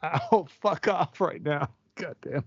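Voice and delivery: words breaking through laughter, laughing while talking. Reacting to a joke about yourself: laughing while talking. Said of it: "I'm laughing too much".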